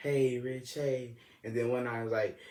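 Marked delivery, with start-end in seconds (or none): 0.0-1.2 real soft, hushed, quiet voice. Retelling how a girl on the phone greeted him: imitating a soft voice. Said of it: "her voice was real soft".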